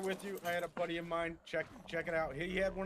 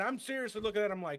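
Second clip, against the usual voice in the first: usual speaking voice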